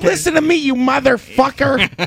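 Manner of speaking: put-on very high, half-baked Midwest gangster accent. Recalling a favorite part of a movie, imitate Joe Pesci as a Midwest gangster. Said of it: "Some kind of Midwest gangster".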